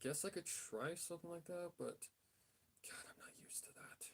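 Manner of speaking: hushed voice. Planning a manga panel while drawing, whispering. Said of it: "Don't ask why I'm whispering".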